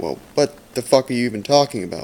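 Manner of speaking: usual speaking voice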